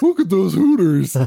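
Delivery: very high-pitched cartoon hero voice. Recommending a movie, the speaker quotes a line in the Fred Jones voice. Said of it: "in the Fred Jones voice from Scooby-Doo".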